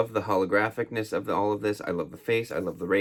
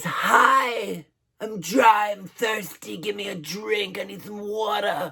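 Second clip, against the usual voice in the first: very high, drawn-out voice of thirsty talking skin; 11 semitones higher than usual. Voicing dry winter skin that asks for a drink: voicing dry skin. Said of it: "Why it sounds like that, I'm not sure".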